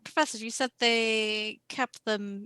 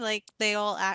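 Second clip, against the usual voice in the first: usual speaking voice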